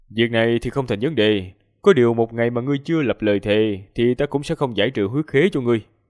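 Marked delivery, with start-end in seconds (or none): none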